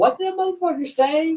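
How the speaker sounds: high, incredulous outburst. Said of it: "I'm like".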